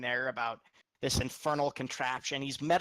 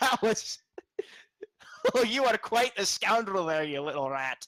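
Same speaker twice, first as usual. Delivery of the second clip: high, loud dragon voice broken by laughter; 6 semitones higher, 5 dB louder than usual. Playing a dragon laughing as Tarbeck gets annoyed: dragon laughing while talking. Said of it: "this dragon is just laughing".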